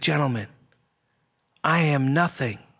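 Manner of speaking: acted, fierce, crisp, fiercely enunciated whisper. Retelling how a man addressed his orchestra, in a fiercely enunciated whisper. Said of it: "In a fiercely enunciated whisper".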